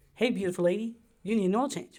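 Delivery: failed New Zealand accent. Suggesting what a car's voice could say to the driver, in a failed New Zealand accent. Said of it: "I can't do a New Zealand accent".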